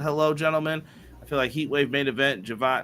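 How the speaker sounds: ordinary delivery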